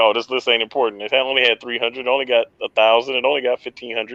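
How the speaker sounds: usual speaking voice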